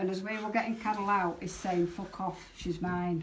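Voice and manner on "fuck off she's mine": ordinary talk, nothing marked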